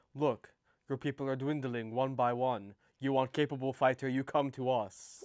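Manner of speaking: menacing, intimidating, pushy persuasive tone. A player tries to persuade another group to come to them for fighters: trying to intimidate. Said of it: "try to rizz up slash intimidate".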